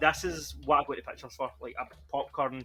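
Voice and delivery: plain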